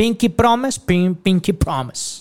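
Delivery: put-on British-style English accent. Wrapping up a numbered rule to his compadre, British accent. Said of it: "Hasta con acento británico".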